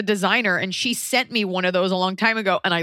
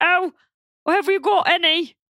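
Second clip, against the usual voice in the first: very high, warbling, dim-witted idiot voice; 11 semitones higher than usual. Explaining where a voice came from, quoting a sketch character, warbly Monty Python idiot voice. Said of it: "that sort of warbly".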